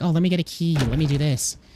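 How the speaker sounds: sickly-sweet, sugary, overly nice polite voice. Mocking how nice the game character is, in a mocking overly nice voice. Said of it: "he's so nice about everything".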